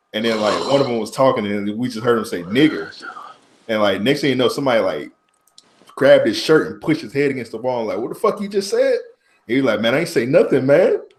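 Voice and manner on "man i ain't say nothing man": put-on Mexican accent, street-talk manner. Retelling a fight where the pushed guy denies everything: mexican accent impression. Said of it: "Your Mexican accent?".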